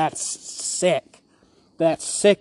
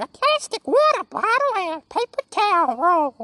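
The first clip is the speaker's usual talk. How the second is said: very high puppet voice with swooping pitch. Telling the listener what the familiar bit is, doing it in Elmo voice. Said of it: "It's Elmo going".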